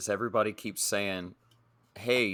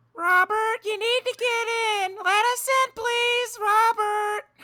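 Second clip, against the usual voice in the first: very high, begging, pleading woman's voice; 4 dB louder than usual. Retelling pretending to be a man's wife so he would open up, imitating his wife's voice. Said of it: "What did that voice sound like, being his wife?".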